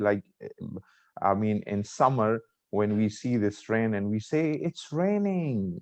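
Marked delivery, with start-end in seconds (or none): 4.5-5.8 high, slow, very happy exclaiming voice. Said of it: "I'm very happy".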